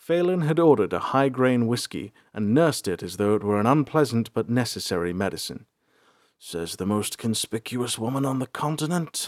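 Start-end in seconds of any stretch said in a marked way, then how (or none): 6.4-9.3 muttered, much quieter. A narrator reads Bolthar answering Phelan, muttered. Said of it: "Bolthar muttered".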